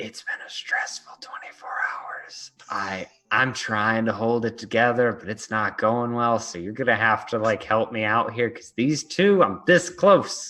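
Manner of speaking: quiet, whispered muttering under the breath. Speaker turns to Key three while the others plan, muttered under breath. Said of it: "mutter under my breath".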